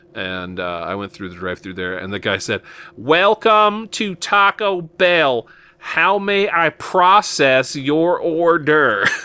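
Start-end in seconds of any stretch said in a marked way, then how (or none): 3.0-9.1 mock, hammed-up, very slow, high-pitched delivery. Retelling how a drive-thru worker greeted the speaker, imitating a hammy drive-thru worker. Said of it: "he was very much hamming it up".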